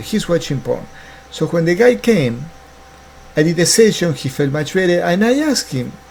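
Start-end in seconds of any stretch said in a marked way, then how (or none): none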